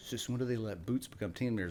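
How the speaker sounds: ordinary delivery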